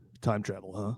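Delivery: very quiet, soft, doubtful, unconvinced murmur. Imagining an actor in a movie role, sounding doubtful about time travel. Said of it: "that's a good Ben Stiller pretending to be doubtful about time travel impression".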